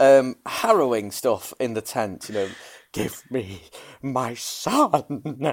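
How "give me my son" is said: very slow, drawn-out, grief-stricken voice. Quoting the father pleading for his son's body in the film. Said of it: "that doesn't sound like I'm doing him a service".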